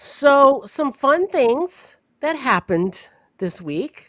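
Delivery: heavy, pointed, dry sarcasm. Opening the podcast's banter about things that happened this week: sarcastic. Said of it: "I say fun things very sarcastically".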